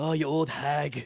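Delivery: put-on Scottish accent, slow and drawn out. Imagining the character Garp calling someone an old hag: Garp in a Scottish accent. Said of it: "He's Scottish, just sort of like".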